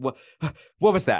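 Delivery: shocked, frightened, genuinely scared, startled voice. Retelling a TV scene where a president is startled: imitating someone scared. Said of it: "genuinely is so scared".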